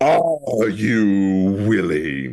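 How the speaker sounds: imposing, commanding voice with a long drawn-out you. Narrating a towering figure closing in on the listener, then voicing him: booming voice. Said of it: "this is how he says it".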